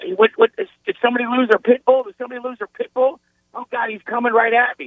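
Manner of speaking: put-on, high, frantic, flustered freak-out, tripping over words. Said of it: "[name] freaked out and goes".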